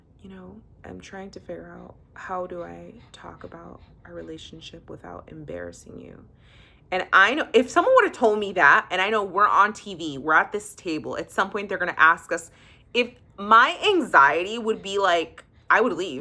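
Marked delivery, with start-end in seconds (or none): 0.2-6.2 very quiet, hushed whispered aside. Retelling what was said at a dinner table: imitating a whisper. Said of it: "Nikki whispers to him and says".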